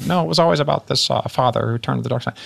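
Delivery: rough, creaky put-on voice. Describing Star Wars research, imitating Lucas's claim as a Lucas impression. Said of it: "That's a really good Lucas".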